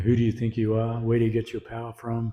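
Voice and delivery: ordinary talk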